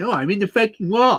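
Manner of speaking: high-pitched whiny voice. Joking about a driver hitting the wall: imitating Lance Stroll whining. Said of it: "such a whiner".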